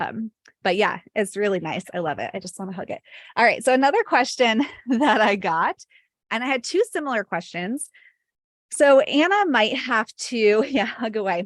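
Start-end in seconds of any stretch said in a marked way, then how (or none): 3.6-11.5 short of breath, winded, still recovering breath. Answering viewer questions right after dancing; out of breath. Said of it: "I'm like totally winded right now".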